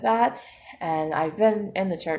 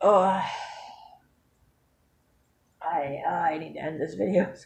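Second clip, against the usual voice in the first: tearful speech, crying while talking. Admitting a challenge can't be met right now, crying while talking. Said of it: "I will stop crying and blowing my nose".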